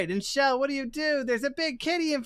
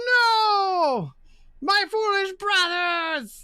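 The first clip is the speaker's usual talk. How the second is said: no stretched out, crawling slowly through it; 6 semitones higher, 4 dB louder than usual. Narrating a game scene, voicing Gargoyle Nine's gargoyle voice. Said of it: "Gargoyle Nine's like, gargoyle sounds".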